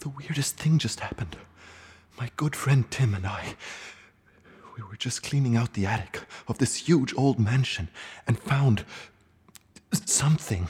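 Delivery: hushed, slightly shaky, trembling whisper. Recording for listeners right after something strange turned up in the attic: whispering, a little shaky. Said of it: "sorry if i'm whispering and still sound a little shaky".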